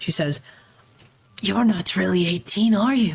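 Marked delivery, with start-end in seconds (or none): 1.4-3.2 hushed yet loud, too-carrying whisper. Game master voicing a tiefling girl who whispers to a player: loud hushed whisper. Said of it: "she whispers to you in kind of a hushed uh, voice, but also kind of loud".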